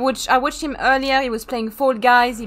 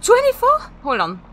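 shocked and startled, much higher pitch; 11 semitones higher, 3 dB louder than usual. Hearing the other player's fuel setting, sounding shocked. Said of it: "You sound shocked then when I said 24".

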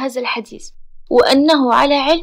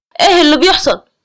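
harsh, cutting, sharp, higher and louder; 2 semitones higher, 6 dB louder than usual. Pulling a screaming, crying woman away from the man dragging her, he speaks, sharp. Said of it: "وتحدث بحدة".

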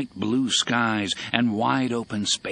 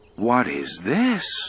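uneasy, concerned, worried, anxious voice. Reading a story aloud, the narrator gives the engineer's question in a worried voice. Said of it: "asked in a worried voice".

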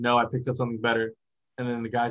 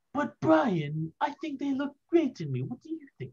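bad put-on cartoon baby voice, higher. Trying a voice after the other speaker's turn: terrible Stewie voice. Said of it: "I'm a terrible Stewie".

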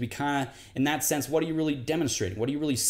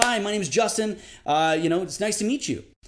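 eager, friendly salesman voice, pitched higher; 6 semitones higher, 4 dB louder than usual. Demonstrating how people at jobs greet others to build rapport: higher-pitched tone. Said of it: "You're talking in a higher pitched tone".

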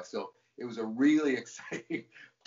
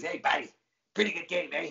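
put-on casual, pitched-up New York accent; 6 semitones higher than usual. Retelling what a huge man at the next urinal said: New York accent. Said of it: "in his New York accent".

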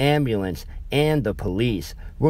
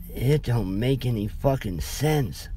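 put-on small, soft, trembling, frightened child's voice; 4 dB quieter than usual. Scott answers the narrator's demand in an uncharacteristically soft, shaky voice. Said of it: "in an uncharacteristically soft, shaky voice".

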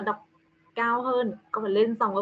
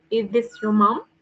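pitch rises on the final word "mom"; 4 dB louder than usual. Teaching learners to read a yes-no question: rising pitch on mom. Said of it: "phải đọc raising tone, có nghĩa là con sẽ đọc lên giọng ở cuối câu".

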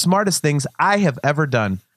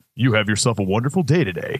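deep broadcast announcer tone; 5 semitones lower than usual. Retelling what a working kid said to him, in radio voice. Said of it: "It sounded like he was on the radio".

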